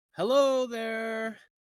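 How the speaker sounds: loud, very high-pitched dwarf voice. In a tabletop game, calling out at a door: loud dwarven voice. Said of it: "a loud dwarven voice".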